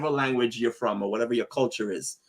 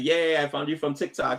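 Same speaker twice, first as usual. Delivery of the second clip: ordinary talk, nothing marked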